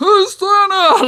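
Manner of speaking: very high, very loud, shrill piercing shriek. Remembering Santa visiting when they were kids, speaker retells Dad screaming at Santa. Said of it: "Like screaming at him and trying to get".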